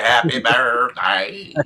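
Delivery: put-on talk-box robot voice. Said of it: "he's [name] in you".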